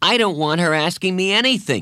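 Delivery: curt, sharp snap. A boy cuts off a girl trying to ask him something, snapping sharply. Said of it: "Jeff snapped".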